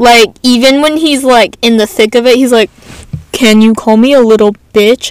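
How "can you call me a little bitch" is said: put-on flat monotone delivery. Quoting a man she says always talks flatly, imitating a monotone voice. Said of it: "monotone as fuck".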